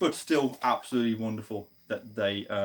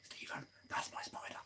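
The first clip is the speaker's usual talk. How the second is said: very soft, breathy, barely voiced whisper. Recalling what they told someone during a lecture about their spider, retelling a whisper. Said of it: "I know I'm whispering because that's how it was".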